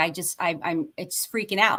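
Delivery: ordinary delivery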